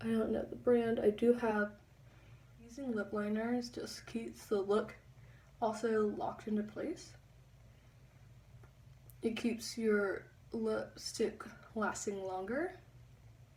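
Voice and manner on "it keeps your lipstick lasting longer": slow, careful talk as if concentrating. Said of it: "Sorry, I'm talking so slow".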